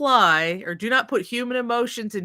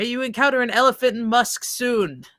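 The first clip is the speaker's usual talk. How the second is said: ordinary talk, nothing marked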